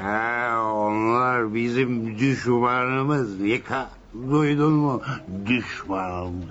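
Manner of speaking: put-on low, slow, slurred drunken voice. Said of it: "Sarhoş o".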